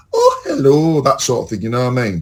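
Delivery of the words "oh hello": bad, put-on, lilting Edinburgh accent. Describing an elderly friend's accent: imitating a soft Edinburgh lilt. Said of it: "but it's a lilt".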